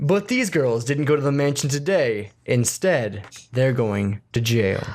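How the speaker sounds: newscaster-style news anchor delivery. Speaker recaps the story for the group in their best newscaster voice. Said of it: "let me do my best newscaster voice".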